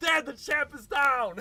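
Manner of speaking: excited shout. Retelling running down the stairs again: retelling own excited shout. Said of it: "down the stairs all excited".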